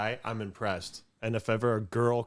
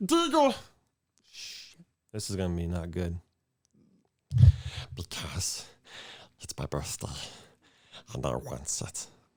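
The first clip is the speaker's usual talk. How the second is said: low put-on character voice; 5 semitones lower than usual. Trying out a Smeagol and Gollum voice for the other speaker: Smeagol and Gollum voice. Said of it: "let's get Smeagol and Gollum out of the way".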